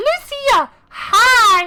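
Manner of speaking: tiny, very high voice with "hi" stretched out. Voicing the game character Tataru, the speaker greets Lucia in a small Tataru voice. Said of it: "She's small and she talks like this".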